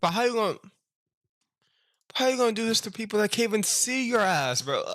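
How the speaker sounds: outraged, very high-pitched, incredulous outburst.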